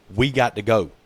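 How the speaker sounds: ordinary delivery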